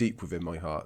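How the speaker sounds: ordinary talk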